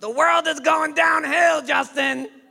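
mock very high, shrill, loud screaming. Retelling what his uncle tells him, imitating Uncle Ludie screaming. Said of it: "He's screaming at me whenever he talks to me".

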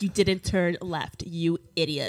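put-on bossy GPS voice. Mocking a rude navigation app voice: imitating Jane the Waze voice. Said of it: "Jane is a little, like, prison mama".

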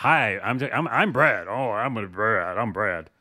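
stumbling, halting, very slow, drawn-out delivery. Speaking for the person beside you after being told to: imitating Brad. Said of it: "That's a really good impression".

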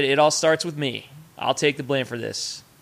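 plain

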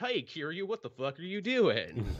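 cartoon voice with wide swooping pitch swings. Imitating a voice actor's line in a game: Goofy voice as Date. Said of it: "he doesn't change his voice that much".

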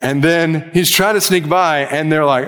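usual speaking voice

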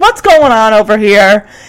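mock, put-on irritated voice. Retelling a film scene where an attendant confronts the band: imitating an irritated person. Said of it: "the, uh, attendant here is irritated".

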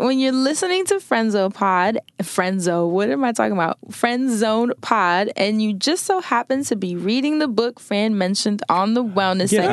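ordinary delivery

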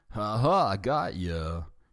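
slow, very drawn-out snickering laugh. Alf teases Lynn with a gotcha; snickering laugh. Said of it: "with a snickering laugh".

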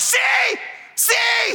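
put-on very high, shouted, insistent yelling. Retelling an argument with a daughter over a word's meaning; retelling own yelling. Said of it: "I'm yelling".

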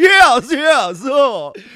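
old rich cartoon tycoon voice, yes drawn out. Speaker imitates Tater, who sounds like an old rich cartoon guy: imitating Tater. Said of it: "sounds like a fucking old rich guy from a cartoon".

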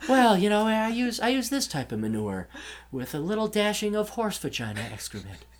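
soft, calm voice. Imitating the podcast's guest expert in the same Bob Ross-like voice. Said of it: "it's the same voice".

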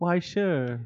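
put-on British accent. Playing a visitor offered a tour of town: British accent. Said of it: "why am I speaking British now?".

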